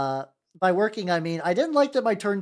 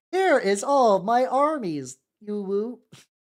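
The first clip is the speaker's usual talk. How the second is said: high, very slow robot text-to-speech voice; 6 semitones higher than usual. Suggesting a way to voice content, in a TikTok robot lady voice. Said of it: "TikTok robot lady voice".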